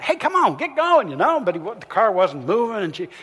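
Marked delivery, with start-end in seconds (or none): 0.0-1.1 mock impatient female yell, much higher. Speaker tells of a driver stuck behind a car at a green light, retelling an impatient yell. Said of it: "she started yelling".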